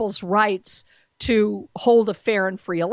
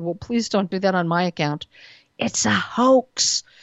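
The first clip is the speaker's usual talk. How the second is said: put-on low, hushed whisper; 2 semitones lower than usual. Speaker retelling what he said to a woman getting her groceries: retelling a low whisper. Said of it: "in a very low, whispered voice".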